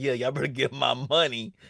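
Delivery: put-on spoken in a young girl's voice. Retelling Olive grinning on the screen: imitating Olive grinning. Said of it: "she was looking at us grinning like".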